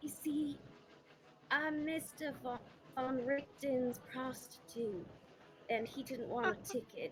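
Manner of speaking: secretive, hushed, confiding stage whisper. Whispering in character into an agitated drunk woman's ear: whispering in character. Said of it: "I'm gonna whisper and say".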